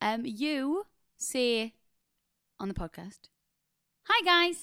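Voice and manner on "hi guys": put-on loud, belted kid vlogger voice. Mocking how the co-host greets listeners on the podcast: imitating a nine-year-old YouTuber. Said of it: "like a nine-year-old YouTuber".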